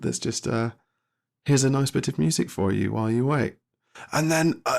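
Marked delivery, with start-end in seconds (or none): 0.0-3.6 canned, robotic automated phone-system announcement voice. Retelling being on hold with the member team, imitating the robotic voice. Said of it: "the robotic voice goes".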